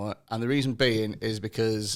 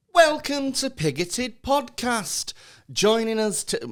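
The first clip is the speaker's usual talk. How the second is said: very camp, very high-pitched voice; 12 semitones higher than usual. Opening the podcast with a welcome, camp high-pitched voice. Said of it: "that's an octave higher than what I'm used to".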